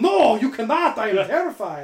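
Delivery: put-on high, loud German accent. Imitating how Dutch would react to being sent up in a plane: Dutch impression. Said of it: "perfect Dutch accent".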